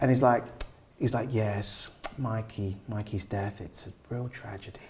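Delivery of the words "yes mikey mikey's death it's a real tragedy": soft, low-key deadpan menacing villain voice.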